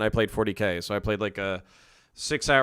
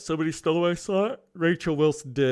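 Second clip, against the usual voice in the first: sleepy, yawning speech, much higher pitch; 6 semitones higher than usual. Live-streaming at night, staying awake for a midnight talk, yawning while talking. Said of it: "sorry for yawning in your fucking ears".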